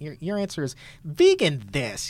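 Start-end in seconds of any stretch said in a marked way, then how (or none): 1.0-2.1 said with a little attitude. Explaining how a book title should be said, the speaker says it with a bit of attitude. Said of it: "you have to say it with a little bit of an attitude".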